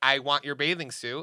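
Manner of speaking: usual speaking voice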